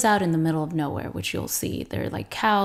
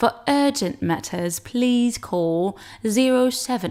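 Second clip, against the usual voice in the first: slow, high, laboured, unconvincing fake British accent; 5 semitones higher than usual. Reading a voicemail greeting in English after Swedish, in an attempted British accent. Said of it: "I can't even do it in British".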